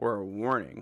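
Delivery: ordinary delivery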